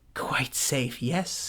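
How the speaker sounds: hushed, under-the-breath whisper. Reading a story aloud, the narrator gives his words to himself: whispering to himself. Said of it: "he whispered to himself".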